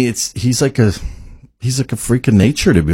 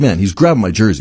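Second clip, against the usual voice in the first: usual speaking voice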